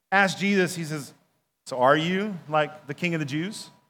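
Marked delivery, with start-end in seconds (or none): 1.6-3.7 low, disdainful, condescending, talking-down tone. Retelling the Bible scene of Pilate questioning Jesus, imitating condescending Pilate. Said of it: "in a condescending tone".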